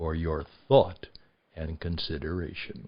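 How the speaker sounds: hushed announcer voice. Quoting the Twilight Zone announcer's closing words: Rod Serling quiet voice. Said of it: "in his quiet voice".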